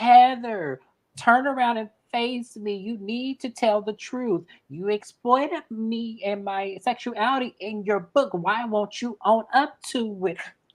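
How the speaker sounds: high, slow, deliberate drawn-out put-on voice. Retelling a confrontation, acting out the accuser: imitating Whitney. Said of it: "And this is Whitney, y'all".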